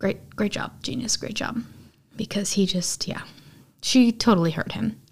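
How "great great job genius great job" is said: put-on mutter, much quieter. Retelling Luke's reaction in the scene, imitating Luke muttering under his breath. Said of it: "even under his breath".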